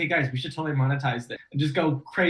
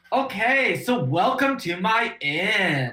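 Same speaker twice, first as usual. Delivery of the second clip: put-on Californian surfer-dude accent; 4 semitones higher than usual. Asked by the group to try doing california, performing a california accent. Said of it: "Try and do California".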